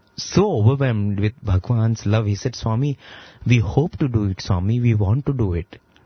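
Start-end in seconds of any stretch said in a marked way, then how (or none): none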